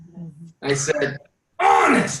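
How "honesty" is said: honesty stressed hard and intensely. Speaker points out stressing a word with the voice: strong stress on honesty. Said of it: "I stressed it, yes. I put the emphasis on that".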